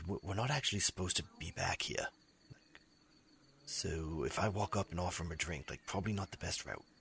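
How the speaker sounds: half-whisper, hushed and kept low. Narrating a game, voicing a character who half-whispers to the player; half-whispering. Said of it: "he whispers to you like".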